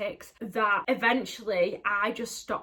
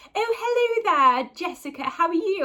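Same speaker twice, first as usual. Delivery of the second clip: put-on affected posh accent, very high-pitched; 9 semitones higher, 7 dB louder than usual. Recalling a cringe-worthy past habit of greeting someone: put-on posh accent. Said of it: "I used to put on a posh accent and be like".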